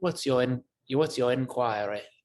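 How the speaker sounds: put-on British accent. Speaker showing how the word inquiry should sound, in a british accent. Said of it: "sounds like you should have a British accent when you say it".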